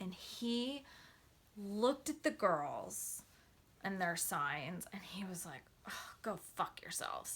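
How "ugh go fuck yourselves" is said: whispered, breathy, venomous and full of contempt. Retelling what a very tall man said to girls holding signs: imitating a venomous remark. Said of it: "it was like this venom that came out of him".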